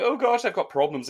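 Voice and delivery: high, weepy, tearful sobbing voice. Retelling a film scene where a character cries at her neighbour's door: imitating Katie Holmes crying. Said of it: "Katie Holmes is crying".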